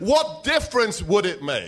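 angry, irritated voice with swooping pitch. Acting out what he said when he was angry, doing an impression of an angry man. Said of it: "It's a pretty good impression".

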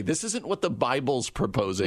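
ordinary talk, nothing marked

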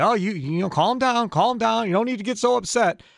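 mimicked quick, high voice. Retelling what a man said after the speaker yelled back, imitating him backpedaling. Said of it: "then he kind of backtracked quickly".

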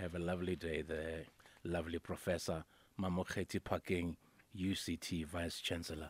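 deep, hushed, very slow, very low, drawn-out voice. Signing off after an interview with a professor: voice going deeper. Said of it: "Why must your voice go deeper when you say that?".

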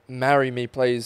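ordinary delivery

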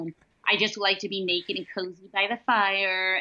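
normal talking voice

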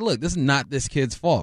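ordinary talk

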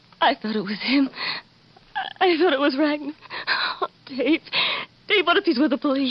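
tearful speech, words broken up by crying. Fearing a visitor is with the police, crying while talking. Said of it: "Stop crying, [name]".

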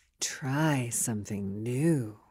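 seductive voice. Showing how to say it to your partner, in your sexiest voice. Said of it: "And you say it in your sexiest voice".

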